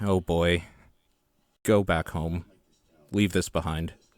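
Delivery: muttered quietly under the breath. A player speaks in character to a hesitant man, muttered under breath. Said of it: "under my breath".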